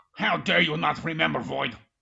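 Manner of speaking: loud, raspy, put-on angry tone. Scolding another speaker for not remembering a muscle: mock anger. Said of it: "I got a little angry".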